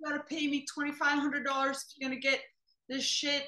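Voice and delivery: put-on half-shouted demanding rant. Recounting a girlfriend demanding money, acting out her screaming. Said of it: "the girlfriend is screaming like".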